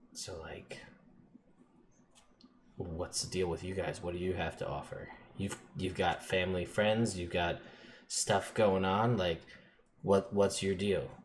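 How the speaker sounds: confiding, hushed, low-key half-whisper aside. Voicing a character with other people around: low-key half-whisper. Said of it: "low-key whispers to you".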